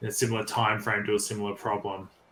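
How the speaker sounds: ordinary talk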